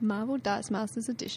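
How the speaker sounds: solemn, grave, serious narrator delivery. Announcing the game edition's name to fellow players, in a serious voice. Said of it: "That was serious voice".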